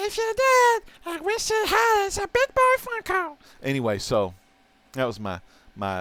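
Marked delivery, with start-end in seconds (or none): 0.0-3.4 put-on very high, childlike puppet voice. Showing off Funko Pops to the audience, Elmo impression. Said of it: "This is my Elmo impersonation".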